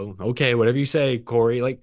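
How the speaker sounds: usual speaking voice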